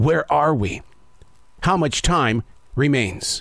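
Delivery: grave, weighty, very serious, solemn tone. Addressing listeners and asking them to reflect, in a very serious tone. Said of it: "I ask that in a very serious tone".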